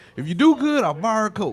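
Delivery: put-on speech pushed past a mouthful of chewing tobacco. Retelling what a baseball coach said after games: imitating someone talking with dip in mouth. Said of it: "He used to chew dip all the time, and this is how he talked".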